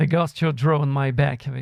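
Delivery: English-accented pronunciation. Introducing a film trailer, saying the English title with an English accent. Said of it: "avec un accent anglais".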